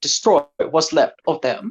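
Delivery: put-on odd pacing of words. Imitating the Trade Federation guy's lines: weird pacing of words. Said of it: "that's how he talks".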